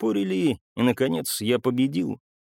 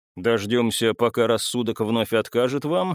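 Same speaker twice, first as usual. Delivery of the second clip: usual speaking voice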